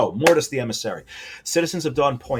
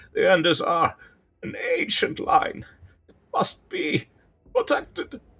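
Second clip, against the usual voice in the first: put-on high, frail, weak, wheezy, broken-up halting voice; 8 semitones higher than usual. A narrator voicing a weakened mouse character, wheezing. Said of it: "he wheezes".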